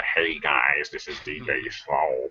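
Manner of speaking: exaggerated, over-the-top put-on cartoon voice. Recall the voice you put on for your old cartoon video, imitating a really over-the-top cartoon voice. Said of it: "I put on this really over the top like".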